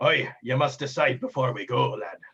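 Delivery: salty pirate sea captain voice. Voicing a ship captain warning the party about the route: pirate captain voice. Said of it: "And the captain says".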